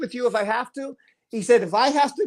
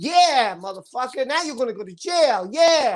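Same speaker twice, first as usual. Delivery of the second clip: play-acted, gloating, sassy jeering tone full of attitude. Retelling what she said when she came down: imitating someone with attitude. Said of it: "She comes down with this attitude".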